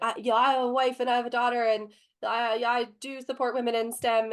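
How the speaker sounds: fumbling, flustered, halting stammer. Retelling a panelist's apology to her after the panel: imitating a man fumbling his words. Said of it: "all fumbling".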